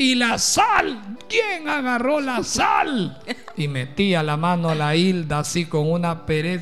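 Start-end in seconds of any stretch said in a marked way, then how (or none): 0.0-3.2 put-on high, slow, drawn-out old lady's shout. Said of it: "decía doña María".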